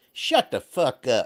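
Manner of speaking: put-on small, slow, drawling voice with Kentucky accent. Retelling a woman's comeback to a man, in a little Kentucky voice. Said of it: "you hear this little Kentucky voice".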